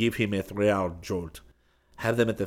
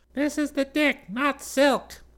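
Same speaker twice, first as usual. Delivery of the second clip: tiny, small, tinny little voice. A voice on a communicator reports back to Perkins, in a tiny, tinny voice. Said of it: "it said in a tiny, tinny voice".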